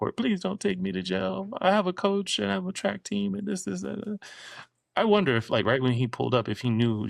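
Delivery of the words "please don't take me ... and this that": acted-out, very high-pitched, pleading begging voice. Retell how a woman facing jail spoke to the man arresting her, imitating a woman begging. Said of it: "She was begging".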